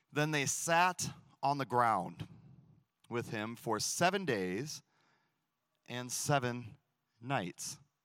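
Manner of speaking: slow, deliberate reading aloud, pausing mid-phrase. Reading a verse from Job aloud so listeners hear it: reading slowly. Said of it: "I'm going to read it slow".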